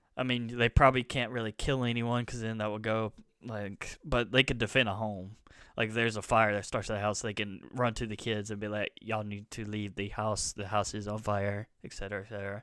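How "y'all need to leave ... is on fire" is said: soft, flat, monotone robotic announcing voice. Describing a home robot warning the kids about a house fire, in a robot voice. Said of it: "like a robot voice".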